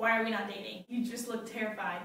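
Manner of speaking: ordinary delivery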